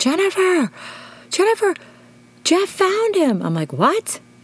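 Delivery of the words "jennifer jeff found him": put-on high-pitched screaming. Speaker acts out a woman screaming down the phone at her, retelling a scream. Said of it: "she's screaming in the phone".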